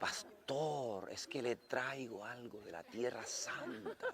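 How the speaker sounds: slow-motion speech, very soft, hushed drawl. A pastor retells a woman's words to him, in very slow speech. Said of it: "hablaba así despacito, en cámara lenta".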